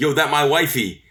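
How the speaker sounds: play-acted, animated, high, excited yelling. Recalling a man behind them who kept yelling at Liv Morgan; retelling a fan's yell. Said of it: "he kept yelling".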